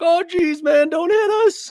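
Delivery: very high, loud, squealing comic voice. Retelling how a passenger reacted when a driver whipped into their lane, sounding a bit like Morty. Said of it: "he's got this hilarious voice".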